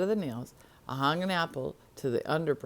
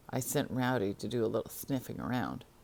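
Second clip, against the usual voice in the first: ordinary delivery, nothing marked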